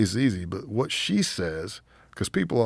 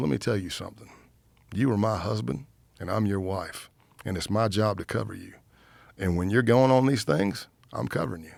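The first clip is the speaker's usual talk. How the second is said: put-on, stern, mock-serious voice. Retelling what a wife said while looking at him: imitating wife speaking sternly. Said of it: "She looked at me, stern".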